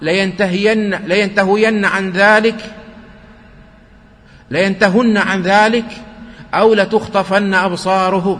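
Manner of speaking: normal talking voice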